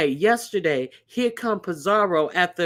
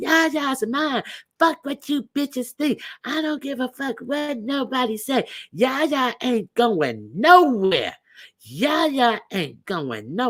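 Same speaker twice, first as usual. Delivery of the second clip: mock defiant, possessive ranting with yelling and screaming; 6 semitones higher than usual. Retelling a woman's rant on a channel: imitating someone yelling and screaming. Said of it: "she was yelling and screaming".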